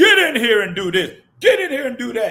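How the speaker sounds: loud, roaring, bellowed voice. Retelling ordering people around during labor: retelling a loud roar. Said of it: "I get loud and start roaring".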